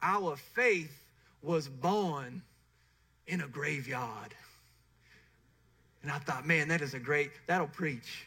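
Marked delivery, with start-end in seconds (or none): 0.0-4.3 put-on slow Alabama Southern drawl. Quoting a man's line from every Easter sunrise service, in an Alabama Southern accent. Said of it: "I'm going to try to do it as well".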